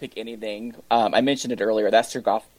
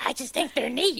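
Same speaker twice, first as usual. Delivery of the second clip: very high, soft, raspy voice; 5 dB quieter than usual. Commenting on someone's choice not to pick the potato, in a Marge Simpson voice. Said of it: "In my Marge Simpson voice".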